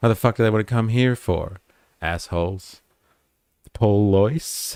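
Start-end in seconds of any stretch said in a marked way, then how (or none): 3.7-4.8 Australian accent laid on thick on the word police. Saying police in an exaggerated Australian accent. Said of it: "I would say police with a really, really damagingly Australian accent".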